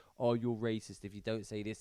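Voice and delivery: ordinary talk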